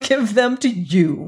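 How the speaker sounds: scornful, contemptuous echoing tone. Hagar repeats a man's request for the letters back at him; contemptuous. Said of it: "repeated Hagar contemptuously".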